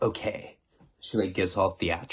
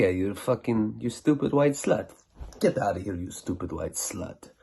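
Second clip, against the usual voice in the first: put-on Middle Eastern accented speech. Retelling shouting at a passenger who could not pay the taxi fare: Middle Eastern accent. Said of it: "so I do the Middle Eastern accent".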